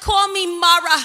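put-on Yiddish accent, loud. Speaker retelling Naomi's return to her community, quoting her: Naomi in a Yiddish accent. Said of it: "because she has a Yiddish accent".

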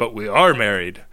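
ordinary talk, nothing marked

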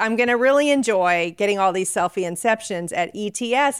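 ordinary delivery

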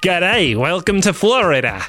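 awful put-on Australian accent. Joking that Melbourne, Florida sounds Australian, greet Florida in a bad Australian accent. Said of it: "This is about the worst accent I've ever done".

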